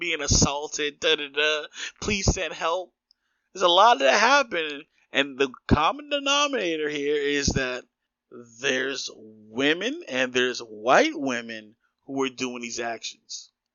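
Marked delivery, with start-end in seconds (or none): 0.0-2.9 mock crying voice. Imitating a woman crying while calling the cops: imitating a woman crying to police. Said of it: "she's crying, calling the cops".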